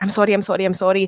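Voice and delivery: acted voice fighting back tears. Describing a man who kept getting emotional through the film: imitating someone near tears. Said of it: "getting really emotional".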